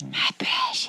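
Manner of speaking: breathy whisper, corrupted-creature voice. Joking about a corrupted guardian of a stone: Sméagol voice. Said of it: "Oh, Schmeagol".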